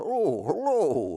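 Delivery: horsey voice, like a horse. Picturing a talking horse in the room greeting you, horsey voice. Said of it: "you don't have to talk like a horse like that".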